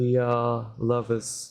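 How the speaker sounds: flat, unconvincing deadpan delivery. Character claiming the two of them are lovers, in an unconvincing tone. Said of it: "That's not exactly coming across in your tone of voice".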